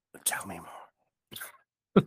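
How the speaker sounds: hushed, whispered words. Asked to do the whisper again during a talk about decibels, whispering. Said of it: "Now do your whisper again".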